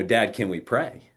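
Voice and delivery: ordinary delivery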